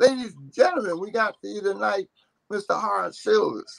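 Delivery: high-pitched club announcer voice, like an emcee. Describing the Birdland host introducing a performer, Pee Wee's high-pitched announcer voice. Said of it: "He had this high pitched voice".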